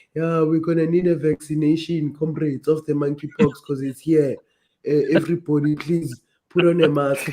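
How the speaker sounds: put-on South African accent, official announcement voice. Joking that officials will announce monkeypox is here: imitating a government official's accent. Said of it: "Did you love that accent?".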